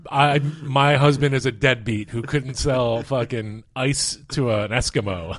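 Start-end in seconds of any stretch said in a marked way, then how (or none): none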